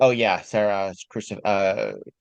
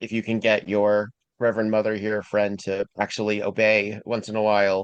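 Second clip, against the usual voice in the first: normal talking voice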